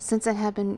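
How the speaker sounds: usual speaking voice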